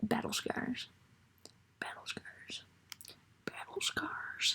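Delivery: slow whisper out of the corner of the mouth. Working on a PowerPoint at home, the speaker repeats the phrase: imitating Jasper, side of mouth. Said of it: "that's how Jasper says it. He talks out of the side of his mouth".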